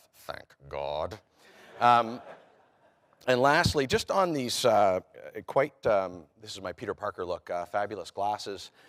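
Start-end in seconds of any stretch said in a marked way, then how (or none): 0.3-1.2 very low, hushed mutter under the breath. Retelling what she said on the flight back: imitating muttering under her breath. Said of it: "under her breath".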